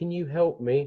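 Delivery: put-on high-pitched, small little child voice. Voicing a rain-soaked tabaxi child at the door: tabaxi child voice. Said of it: "a tabaxi child ... walks up to you and says".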